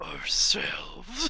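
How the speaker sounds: breathy, soft, whispered demonic voice. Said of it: "it's a little bit demonic, her voice".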